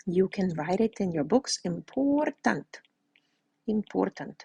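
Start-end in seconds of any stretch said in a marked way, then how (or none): 1.6-4.4 fake Russian accent, hit hard, emphatic. Telling students something is very important, switching on a put-on russian accent. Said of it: "I turn on my Russian accent".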